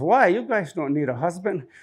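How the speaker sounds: rough, gruff, teasing grandpa voice grumble. Retelling what Grandpa said to the kids: imitating gruff grandpa. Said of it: "he gets real gruff with us".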